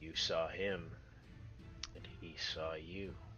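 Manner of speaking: low, sneering whisper. The narrator voices a woman as her eyes meet a player's gaze, in a sneering whisper. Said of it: "she kind of lets out a sneer and says".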